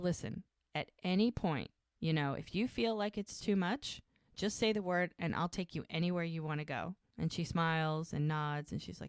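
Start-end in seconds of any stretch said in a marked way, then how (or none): none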